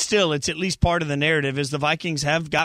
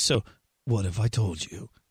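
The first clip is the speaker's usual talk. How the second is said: put-on deep, dropped voice; 7 semitones lower, 4 dB quieter than usual. Introducing a football stat with a favorite phrase, in a put-on deep voice. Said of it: "I always want to use this phrase with like a deep voice".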